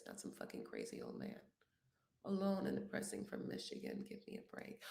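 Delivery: whispered, barely audible, very quiet character voice. Doing an impression again at a viewer's request: Jasmine impression. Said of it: "can you do the Jasmine impression again?".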